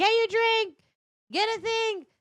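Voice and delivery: play-acted very high, loud, nagging hollering. Retelling what is said before leaving: imitating own yelling. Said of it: "I yell at him".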